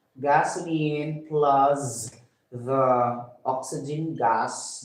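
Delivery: very slow, deliberate, spelled-out dictation voice.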